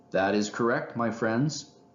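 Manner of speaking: ordinary delivery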